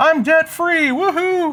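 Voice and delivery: mock very high, shrieking celebratory scream. Mocking people on the internet who celebrate being debt free: mock debt-free scream. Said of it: "do like a debt free scream".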